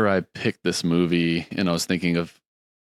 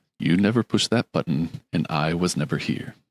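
put-on commanding voice. Quoting a movie character for a guessing game, imitating a commanding voice. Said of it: "I'm not doing a great impression".

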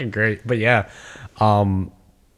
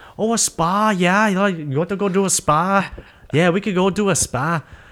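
bad put-on Welsh accent, much higher pitch; 8 semitones higher than usual. A speaker retelling a conversation between two fighters: attempted welsh accent. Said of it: "I can't do a Welsh accent".

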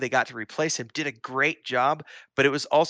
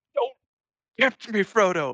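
high, rattled, freaked-out outburst; 8 semitones higher than usual. Quoting a favorite film line where Gandalf freaks out over the ring. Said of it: "he just freaks out, like".

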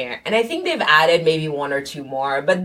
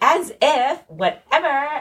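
very high, put-on Valley Girl accent; 10 semitones higher than usual. Immigrant recalls learning to speak American, in a Valley Girl voice. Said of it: "British to Valley Girl".

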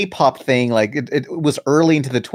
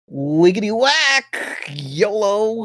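high-pitched cartoon bobcat voice; 8 semitones higher than usual. Asked what else Bubsy says, doing another of his taglines: Bubsy impression. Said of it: "What else does Bubsy say?".

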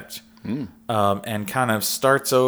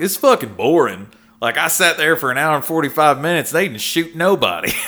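loud, overdone, exaggerated rural country accent; 6 semitones higher, 5 dB louder than usual. Reviewing a movie, mimicking other viewers' complaints in an exaggerated country accent. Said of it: "automatically putting on an exaggerated country accent".

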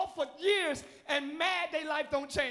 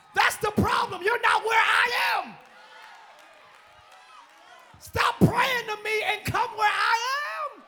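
loud, high, overdone fired-up hyped yelling; 7 semitones higher, 7 dB louder than usual. Addressing listeners while too hyped to hold back, yelling. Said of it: "I'm yelling too much".

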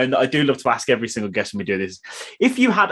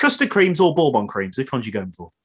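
ordinary talk

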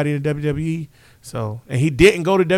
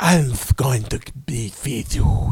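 menacing, sinister comic-book villain tone; 3 semitones lower than usual. Mocking how a wrestler talks compared to his father, Cody Rhodes impression. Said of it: "Cody be like".

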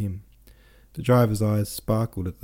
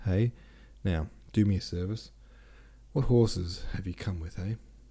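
ordinary delivery

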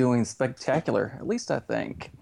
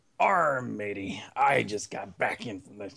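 put-on pirate voice, lower; 2 semitones lower than usual. Show host greets a guest host, in a pirate voice. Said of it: "2.5 seconds is my limit, too, of pirate".

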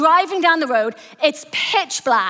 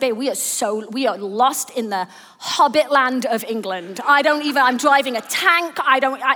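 ordinary delivery

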